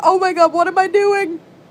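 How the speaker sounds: acted, scared, high-pitched, frightened fretting. Recalling the first time boot camping a computer, acting out past self; retelling being scared. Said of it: "I was so scared".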